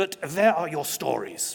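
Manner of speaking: loud, badly done put-on German accent. Telling of being shown illustrations, quoting Klaus in a terrible deep German accent. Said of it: "a deep German accent".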